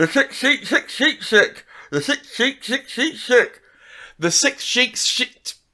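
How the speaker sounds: speaking with pencil in mouth. Trying a tongue twister again, talking with a pencil in mouth. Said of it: "I'm just gonna put a pencil in my mouth again".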